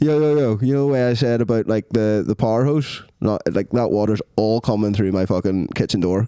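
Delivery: plain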